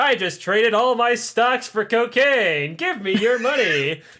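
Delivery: cheap, little, looping animatronic businessman voice. Retelling a show scene, imitating a looping animatronic businessman. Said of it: "shitty little animatronics, like, looping things".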